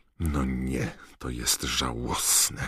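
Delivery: slow, scornful, disdainful, contemptuous muttering. Passing schoolgirls fussing over getting an autograph, a girl mutters: contemptuous mutter. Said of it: "mruknęła z pogardą Hermiona".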